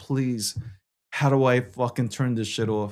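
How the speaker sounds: desperate, panicked, pleading voice. Retelling a drone flying around the office: retelling a desperate plea. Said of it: "praying to God".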